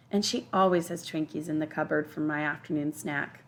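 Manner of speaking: ordinary delivery, nothing marked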